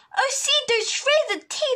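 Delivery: gasped out, very high-pitched gasping cry. The others hide as the hermit crab dives into its shell, gasping. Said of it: "they gasped".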